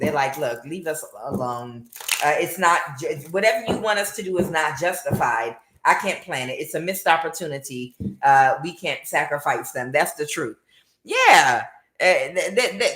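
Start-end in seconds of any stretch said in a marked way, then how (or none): none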